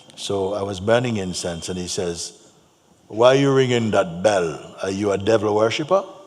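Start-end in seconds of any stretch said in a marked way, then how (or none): 3.1-6.1 loud, very crusty big man's voice. Retelling what a man on the high street asked: imitating a very crusty voice. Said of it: "very crusty voice".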